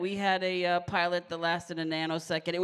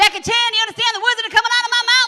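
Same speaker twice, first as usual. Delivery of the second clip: bad, shrill, very loud, high belting; 9 dB louder than usual. Quoting a movie line to show the impression: bad Chris Tucker impersonation. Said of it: "my bad Chris Tucker impersonation".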